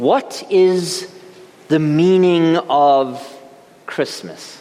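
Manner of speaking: slow, heartfelt, poignant philosophical presenter voice. A pastor recalling a presenter's Christmas question, imitating a poignant philosophical voice. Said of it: "in a very philosophical voice".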